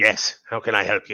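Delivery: grumbly, grumbling character voice. Someone answers the party's knock at the abbey door; grumbly, slightly squeaky voice. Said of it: "this was the voice. Slightly less squeaky than Blinksy, but still grumbly".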